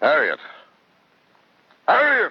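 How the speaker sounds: loud swooping yell. In a drama, a character calls out for Harriet: yelling. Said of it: "Stop yelling".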